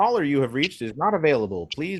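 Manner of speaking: canned, generic automated phone-system announcement voice. Quoting the voicemail greeting a caller hears, in an automated voicemail voice. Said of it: "the voicemail is an automated voice that says".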